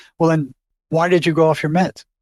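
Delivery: plain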